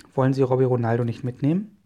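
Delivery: ordinary delivery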